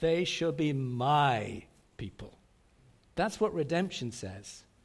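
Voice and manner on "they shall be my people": heavy stress on the word "my". Explaining what redemption says, with stress on my. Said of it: "Let's put the emphasis on my".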